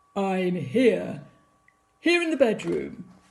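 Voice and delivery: deep, low-pitched voice. Reading the story aloud, the narrator voices a reply to the girl in a deep voice. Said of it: "a deep voice replied".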